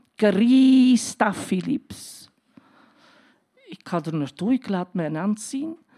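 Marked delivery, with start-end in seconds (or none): 0.2-2.3 put-on Spanish accent on a name. Retelling her trauma doctor calling out her official name: spanish accent. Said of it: "met een Spaans accent".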